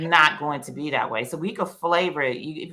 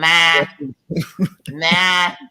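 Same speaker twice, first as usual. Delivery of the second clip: put-on, loud New York accent; 7 dB louder than usual.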